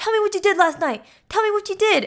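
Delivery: very high, shrill, insistent angry tone. Retelling a story of a woman speeding up while questioning a man: retelling an angry demand. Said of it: "why are you getting mad?".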